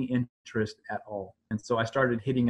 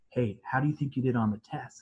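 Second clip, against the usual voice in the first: secretive, conspiratorial, confiding, in-the-know tone. Retelling how interviewers asked about the exam: imitating a secretive hushed tone. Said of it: "in that secretive, hushed tone".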